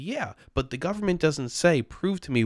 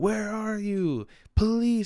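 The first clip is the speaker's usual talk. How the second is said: put-on scream, higher; 8 semitones higher than usual. Retelling a subway video: imitating a man screaming for police. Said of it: "he's screaming for the police".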